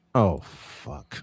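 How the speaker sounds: soft, breathy, hushed whisper under the breath. Retelling what a pretty lady said as the game headed to overtime: imitating a whisper. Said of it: "I hear this pretty lady whisper".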